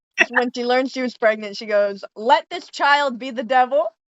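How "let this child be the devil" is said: ordinary talk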